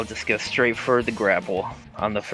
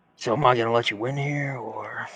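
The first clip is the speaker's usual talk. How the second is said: soft whisper; 4 dB quieter than usual. Playing a character who asks an opponent about letting him win: whispering in his ear. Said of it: "just whisper in his ear".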